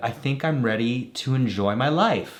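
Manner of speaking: ordinary talk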